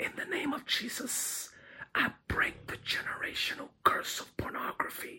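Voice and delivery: soft hushed whisper. Retelling a deliverance prayer said over someone on the floor: imitating own whispered prayer. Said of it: "I'm whispering it".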